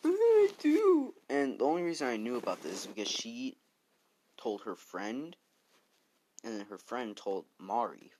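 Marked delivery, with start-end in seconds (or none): 0.0-1.1 slow, very high, very loud tearful crying wail. Retelling what she said when she came home, imitating her crying. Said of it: "she was crying".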